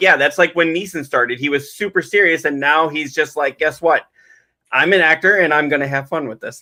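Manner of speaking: ordinary delivery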